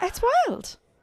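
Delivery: very high-pitched, indignant, outraged disbelief. Reacting with outrage to the US taking in a disgraced figure: high-pitched, outraged. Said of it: "sorry, I'm going very high-pitched".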